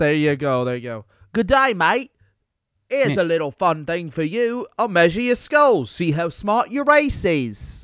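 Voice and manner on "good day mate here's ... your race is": fake Australian accent drifting English, much higher. Asked whether to try an australian accent, one speaker attempts it, australian accent drifting english. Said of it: "Was that English? I feel like I just hit English".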